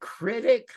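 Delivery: put-on contemptuous stress on the word "critic". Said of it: "he said it like he hated critic".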